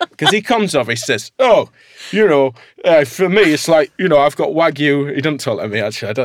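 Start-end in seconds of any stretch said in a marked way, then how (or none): 1.4-5.1 loud, slow, exaggerated Northern English accent caricature. Quoting a man from a farm he criticized, in a Northern accent caricature. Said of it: "I'm doing a Northern accent caricature myself here".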